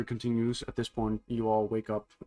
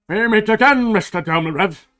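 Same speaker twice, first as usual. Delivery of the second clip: very loud, shrill, high-pitched calling voice; 10 semitones higher, 14 dB louder than usual. Narrating a scene to players as a stranger's voice wakes everyone: loud voice. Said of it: "you hear a loud voice going".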